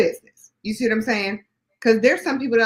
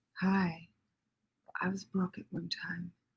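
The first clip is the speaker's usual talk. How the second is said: put-on sexy voice, lower and quieter; 4 semitones lower, 15 dB quieter than usual. Imitating an audio version of Constance's book: imitating Constance's sexy voice. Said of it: "She's trying to sound all sexy".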